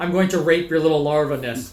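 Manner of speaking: ordinary talk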